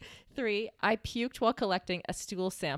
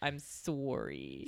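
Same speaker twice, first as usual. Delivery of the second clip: very Canadian "sorry", lower and quieter; 5 semitones lower, 6 dB quieter than usual. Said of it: "I said that in a very Canadian way".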